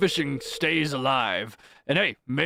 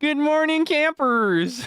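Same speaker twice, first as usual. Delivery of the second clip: put-on, very high-pitched cartoon TV host voice; 11 semitones higher, 4 dB louder than usual. Trying out an accent while admitting to being bad at accents, bad Chris McLean impression. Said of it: "I feel like Chris McLean".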